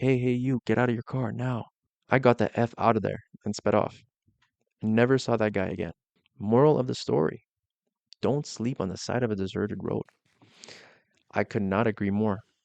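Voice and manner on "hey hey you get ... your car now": mock hostile, demanding half-shout, mildly yelled. Reading a story where a man sprints out screaming at the driver: imitating a man screaming. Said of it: "He starts screaming at me".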